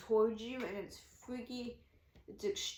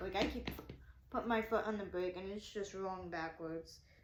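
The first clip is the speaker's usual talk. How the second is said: ordinary talk, nothing marked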